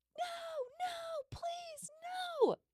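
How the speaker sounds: very high, sobbing, terrified, pleading scream.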